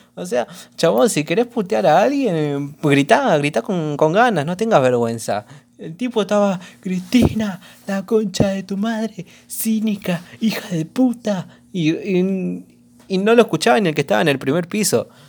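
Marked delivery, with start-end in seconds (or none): 6.8-11.5 yelling barely above a murmur, hushed and very soft. Retelling how a guy hurled insults, imitating a very quiet shout. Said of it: "gritaba re despacio".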